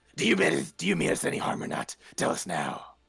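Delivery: creaky, rough, grumbling voice. Storyteller voicing someone behind the front door: grumbly voice. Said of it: "you're gonna hear this grumbly voice".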